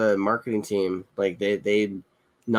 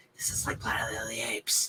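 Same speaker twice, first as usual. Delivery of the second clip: soft, hushed, breathy whisper; 10 dB quieter than usual. Retelling a remark to the wife during a quiet movie scene: imitating a whisper. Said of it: "whispered sweet nothings in the wife's ear and went".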